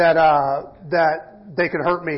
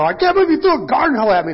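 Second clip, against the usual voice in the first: put-on astonished disbelief, pitched up; 8 semitones higher than usual. Retelling a play fight after he threw a garden hoe, feigned shock. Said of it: "And then I feign".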